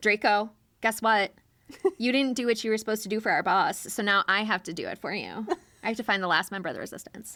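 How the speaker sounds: acted, very sassy delivery, sass in every word. Retelling how a fictional villain arrives on a mission: sassy Lucius voice. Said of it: "very sassy".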